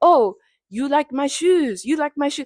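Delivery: high, put-on French accent with broken English. Retelling what a guy said at the kiosk: imitating a french accent. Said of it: "what I'm doing is a French accent".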